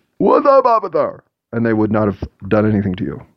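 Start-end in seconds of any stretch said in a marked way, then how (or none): 0.2-1.2 put-on very high, slurred, drunken holler. Describing shouting out a car window at police by a stoplight: drunk slurred shout. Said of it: "shout out your window in slurring speech".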